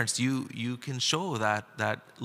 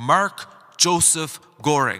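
stern, loud, angry shout; 3 semitones higher, 8 dB louder than usual. Speaker imagines God calling their full name during danger: mock-stern shout as God the Father. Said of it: "a very stern, angry voice and loudly called out".

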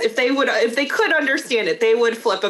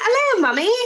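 put-on, very high-pitched child's British accent; 12 semitones higher than usual. Retelling how the kids started talking after a cartoon: imitating kids' british accent. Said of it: "my kids started speaking British".

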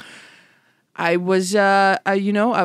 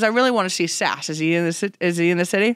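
usual speaking voice

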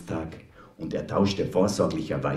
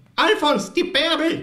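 shrill, very high-pitched, loud shouting cry; 5 dB louder than usual. The neighbor shakes Alfons by the shoulders at the regulars' table, shouting. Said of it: "was schreist denn so?".

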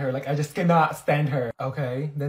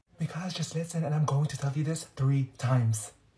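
soft half-whisper under the breath; 6 dB quieter than usual. About to tell someone something in secret, half-whispering. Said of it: "Why are you whispering?".

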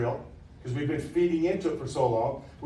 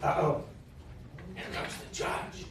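hushed, timid, jittery, nervous whisper; 8 dB quieter than usual. Narrator reading a kid seeing a man enter behind the judge's seat: hushed, nervous, timid. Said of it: "in a hushed, nervous voice, timidly says".

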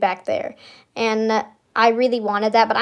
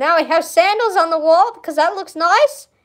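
put-on Australian accent, higher, drifting in; 7 semitones higher than usual. Showing items in a gift shop, switching into a fake Australian accent. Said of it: "Now it's turning into Australian".

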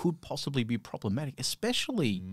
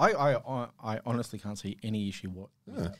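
ordinary delivery

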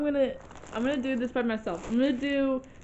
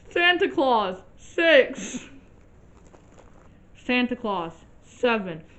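loud talk through a stuffed, full mouth; 6 dB louder than usual. Saying each numbered Santa Claus with a stuffed mouth, talking with mouth full. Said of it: "they're like disintegrating in the back of my mouth".

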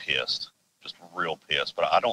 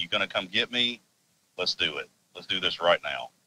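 put-on angry, challenging tone. Retelling standing up to a stomping, huffing creature at night: retelling an angry challenge. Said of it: "I'm ticked off".

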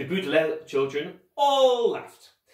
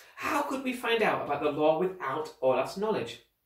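ordinary delivery, nothing marked

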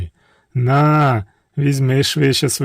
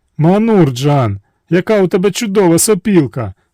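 high-pitched, exclaiming tone; 6 semitones higher, 4 dB louder than usual. Narrator voicing the princess speaking to Manur Jan, exclaiming. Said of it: "вигукнула царівна".

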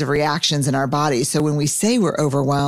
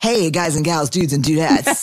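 mock smooth, suave tone. Imitating how Barrett sounds on the book club: suave impression of Barrett. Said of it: "she sounds like".

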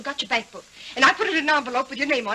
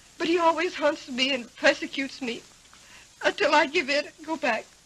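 weeping, tearful voice. Confiding in a listener, crying. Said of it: "don't cry".

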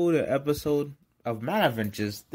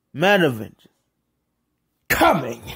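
loud, excited shouting yell; 6 dB louder than usual. Speaker addressing listeners, asking them to comment, then yelling. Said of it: "I don't know why I'm yelling".

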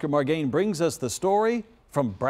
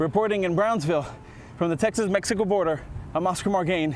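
breathless, winded, out-of-breath delivery. A reporter signs off from brownsville on the texas-mexico border, out of breath. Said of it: "and I'm out of breath".

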